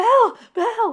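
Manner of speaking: acted, frantic, hysterical, very high-pitched cry. Recapping a scene, the speaker quotes Gold calling after Belle: imitating Gold's hysterical cry. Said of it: "Gold is hysterical and he's like".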